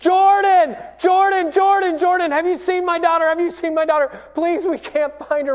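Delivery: put-on desperate, frantic, high yelling at full voice. Retelling searching a beach for a missing daughter: retelling yelling at the top of his voice. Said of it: "I'm just yelling out loud".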